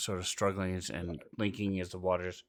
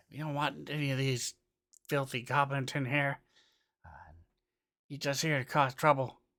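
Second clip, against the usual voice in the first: pitched-up shouting, crowd yelling; 7 semitones higher, 3 dB louder than usual. Narrator describing a scene voices the townspeople: townspeople yelling. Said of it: "you hear a couple people yelling".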